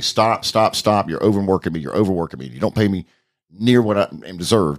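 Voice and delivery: ordinary talk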